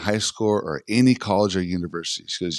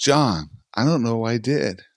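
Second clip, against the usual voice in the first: put-on, tearful, broken-up crying out; 4 semitones higher than usual. Retelling what a collapsing student cried out: imitating someone crying and yelling. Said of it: "he's just crying and yelling this out loud".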